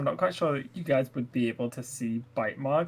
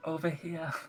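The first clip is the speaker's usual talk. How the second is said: hushed, half-whispered voice; 3 semitones higher, 6 dB quieter than usual. Voicing a trapped character who can barely talk: half-whispering in character. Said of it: "I'll just whisper out".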